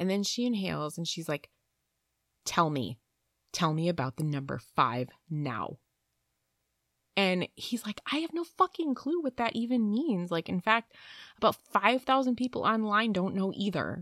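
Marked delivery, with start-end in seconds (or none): 2.4-5.8 put-on deep male voice, pitched lower. Retelling a woman who spoke in a man's voice, imitating a deep man's voice. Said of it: "like a man voice coming out of her".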